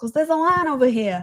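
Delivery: clumsy fake New York accent. Repeating the other speaker's line, in a bad New York accent. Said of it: "That was a terrible accent".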